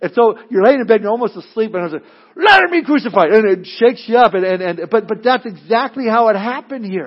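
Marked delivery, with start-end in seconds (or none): 2.4-3.3 mock scream, much higher and louder. Recalling a line that was screamed while he lay almost asleep: reenacting a scream. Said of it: "And he screams it".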